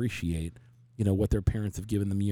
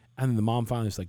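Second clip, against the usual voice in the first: usual speaking voice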